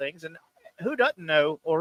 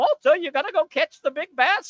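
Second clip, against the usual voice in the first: put-on raised, high old-woman voice; 11 semitones higher, 5 dB louder than usual. Speaker recalls an old actress in a movie, imitating a very old woman. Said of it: "she was very old and she talked like this".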